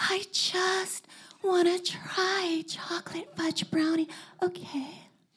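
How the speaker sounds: all-breathy, airy delivery. Reading a story, a girl leans in to a man and speaks, breathy. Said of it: "says, all breathy".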